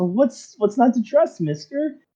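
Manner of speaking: put-on high, sweet, sing-song, innocent young voice.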